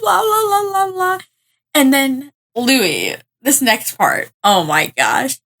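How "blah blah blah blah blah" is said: crying, tearful voice. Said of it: "she starts crying".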